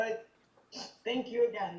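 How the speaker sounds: voice strained from holding back tears. Thanking the group on a Zoom call, holding back tears. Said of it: "not gonna cry, not gonna cry".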